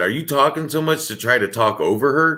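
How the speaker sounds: plain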